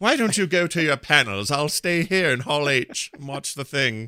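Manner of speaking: fancy British butler way of talking. Imagining his baby grown up, the speaker voices him like a British butler. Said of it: "He talk like a British butler".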